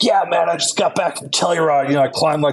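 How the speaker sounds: high-pitched, eager, excited, boastful voice.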